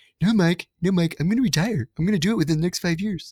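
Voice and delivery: very high, squeaky put-on voice. Imitating Brian insisting he will retire soon: Brian impression. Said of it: "that's my Brian impression".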